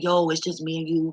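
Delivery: ordinary talk, nothing marked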